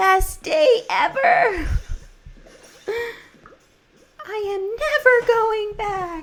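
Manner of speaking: very high, slow, drawn-out goofy voice. Quoting a movie line while streaming a game: own silly voice. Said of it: "doing my own silly voice".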